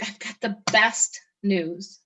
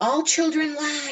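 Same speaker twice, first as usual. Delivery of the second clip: mock screaming voice, higher pitch; 7 semitones higher than usual. Retelling what the last lawyer to call said: imitating someone screaming. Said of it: "he was screaming it".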